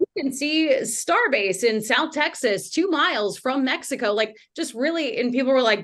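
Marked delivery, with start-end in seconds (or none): 0.0-4.1 TV news reporter delivery. A youtuber showing how her early videos sounded, in a news anchor reporter voice. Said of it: "I was really still in that reporter voice".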